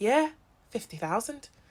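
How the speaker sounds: put-on deadpan, dead-straight, flatly obvious tone. Describing a scene, the speaker quotes the man answering the woman, imitating a deadpan reply. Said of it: "he looks at her like deadpan".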